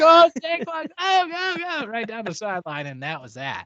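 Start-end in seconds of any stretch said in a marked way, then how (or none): 0.0-1.9 very high, very slow, stretched-out screaming cheer. Retelling watching a run down the sideline on Christmas: retelling own screaming. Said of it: "I was screaming".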